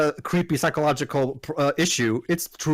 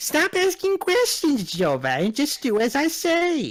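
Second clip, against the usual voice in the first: put-on very high old lady fairy voice; 10 semitones higher than usual. The speaker tries to imitate the fairy's voice as well as possible, imitating the fairy's voice. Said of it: "imitate the voice of the fairy".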